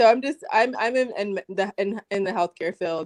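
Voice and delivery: halting stammer, stumbling, words repeating. Speaker starting to share a story after being told to go ahead, stuttering. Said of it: "Sorry, I'm stuttering".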